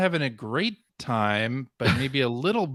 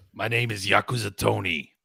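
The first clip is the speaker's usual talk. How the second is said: put-on Brooklyn gangster accent, lower; 4 semitones lower than usual. Introducing a joke character: brooklyn mobster voice. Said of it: "Like a Brooklyn mobster?".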